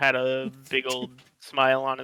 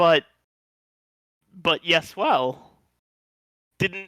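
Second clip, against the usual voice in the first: shocked and surprised, higher and louder; 4 semitones higher, 5 dB louder than usual. Voicing a character who is told in Draconic to come back: shocked. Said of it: "has a really shocked expression on his face and goes".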